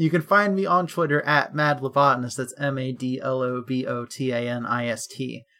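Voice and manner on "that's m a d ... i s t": very slow, letter-by-letter spelling. Spelling out a Twitter handle on a podcast: spelled out slowly. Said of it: "I have to say it slowly".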